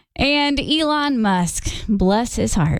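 mocking tone. Bringing up a news item about a rich man's losses: sarcastic. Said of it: "That was totally sarcastic".

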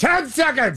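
strong, high-pitched projected voice. Retelling a timing cue he heard in his ear, in full voice. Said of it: "full voice".

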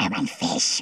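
breathed-out whispered acted voice. Performing after the hosts ask for a Gollum impression: Gollum voice. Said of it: "I wanna hear [name] do Gollum".

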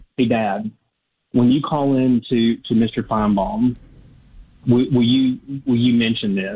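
ordinary talk, nothing marked

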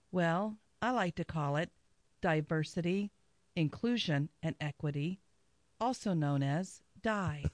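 calm public radio host voice. Radio host doing a spontaneous bit in the studio, NPR host impression. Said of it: "this spontaneous impression of NPR over there".

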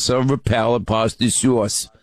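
mock New York accent on the vowels.

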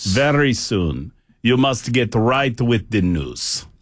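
put-on Russian accent. Imagining Russian overlords calling in a newscaster, mock Russian accent. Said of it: "That's the best Russian I got".

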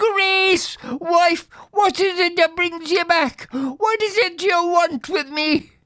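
very high, shuddering, fearful cry. A man in bed addresses his dead wife's ghost, exclaiming while shuddering. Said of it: "shrinking and shuddering, the poor man exclaimed".

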